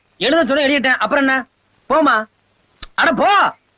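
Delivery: mild shouting, dismissive tone. Arguing while being asked to write down an address, shouting. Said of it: "ஏன் கத்துற?".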